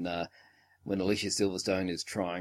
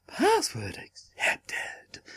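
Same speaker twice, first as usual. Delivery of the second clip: put-on overjoyed computer voice, much higher. Telling how she cracked the password, in a mock-delighted computer voice. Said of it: "sounds like the computer's is way too delighted".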